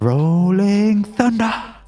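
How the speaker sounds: very high, loud, belted battle cry. Answering a request for a Rolling Thunder impression from Haikyuu: Rolling Thunder impression from Haikyuu. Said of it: "can you do your best Rolling Thunder impression?".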